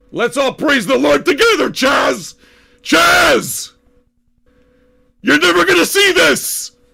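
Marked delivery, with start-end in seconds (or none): 1.7-6.7 silly high-pitched yelling. Calling out to someone who will never see the show: yelling. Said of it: "I'm yelling like a fucking moron!".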